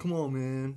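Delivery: surfer dude voice. Showing how a comic villain talks when read aloud: surfer dude voice. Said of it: "That's how he talks".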